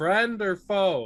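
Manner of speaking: yelling out. A player's character, a thousand feet off, calls out to strangers, yelling out. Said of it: "yell out in giant".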